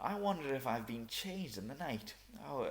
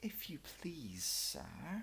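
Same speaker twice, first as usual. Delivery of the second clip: shy, hushed, soft, timid, very drawn out; 3 semitones higher, 5 dB quieter than usual. Alice, desperate for help, speaks to the rabbit in a low, timid voice. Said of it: "she began in a low, timid voice".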